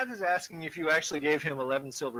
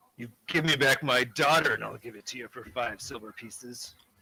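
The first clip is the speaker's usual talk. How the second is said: grunting character voice; 2 semitones lower than usual. Narrator voices a character bargaining over the price with the player, grunting. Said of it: "He grunts and looks at you and says".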